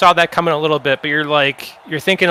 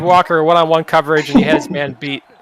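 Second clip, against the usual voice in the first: ordinary talk, nothing marked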